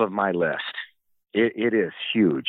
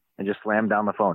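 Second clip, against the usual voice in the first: ordinary talk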